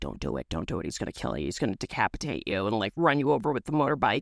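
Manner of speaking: deep, dropped, very low motherly voice. Retelling a stranger asking for jumper cables at night, imitating late mother's voice. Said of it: "my late mother's voice is like".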